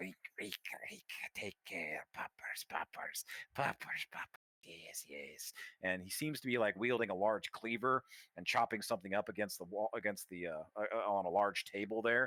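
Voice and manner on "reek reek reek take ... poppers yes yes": hoarse, raspy, croaking creature voice, breathy mutter. Storyteller voicing a figure heard from a distance, raspy, croaky voice. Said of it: "you can kind of hear this raspy, kind of croaky voice".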